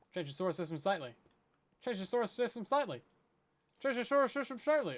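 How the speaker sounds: rapid-fire repetition. Taking up the challenge to say the phrase five times fast: very fast. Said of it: "Say that five times fast".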